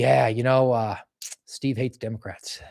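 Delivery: mock-deadpan, flat put-on delivery. Retelling a guy's answer to FBI investigators, retelling a deadpan answer. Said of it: "He's really funny and deadpan answer these guys".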